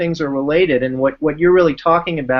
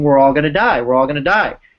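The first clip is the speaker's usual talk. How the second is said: put-on panicked, freaking-out kid screaming, said twice. Retelling a separated camper kid freaking out: imitating a kid screaming. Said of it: "he starts screaming".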